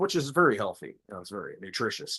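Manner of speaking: dry, tongue-in-cheek sarcastic tone. Praising high fructose corn syrup, sarcastic. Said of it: "sarcastically saying this".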